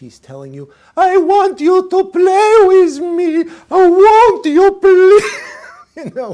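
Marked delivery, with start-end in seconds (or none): 1.0-6.0 full-out dog voice, very high, loud, slow. Explaining what a dog's ear scratching means, voicing the dog in a doggy voice. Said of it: "we just like went full out with that doggy voice".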